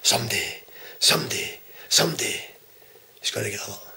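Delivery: deep, drawn-out, quiet threatening murmur. Acting out how your addressee finished by talking into the camera, imitating quiet, slow, deep threat. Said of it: "talking all slow and deep into the camera".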